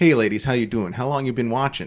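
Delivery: put-on thick Boston accent. Retelling what a man in his mid thirties said to two teenage girls, thick boston accent. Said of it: "in his thick Boston accent".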